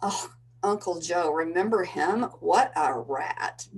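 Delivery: sneering, contemptuous, disdainful, scornful tone. Imagining the aunt turning to the mother: imitating the aunt, with disdain. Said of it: "says with disdain".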